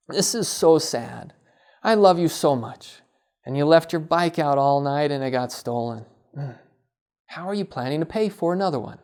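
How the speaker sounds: gentle, sorrowful, empathetic sad tone. Showing how a parent responds to a child's mistake: empathetic, sad tone. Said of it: "it sounds something like this".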